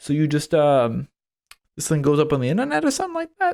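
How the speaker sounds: lost-sounding voice with swooping pitch. Retelling a podcast guest's confused questions: worst Mel Brooks impression. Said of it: "This is the worst Mel Brooks impression".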